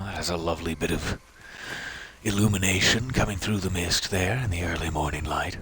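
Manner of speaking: soft, sensual, sensuous half-whispering voice. Speaking directly to the listener, in a sensuous half-whisper. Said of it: "I'm whispering so sensuously".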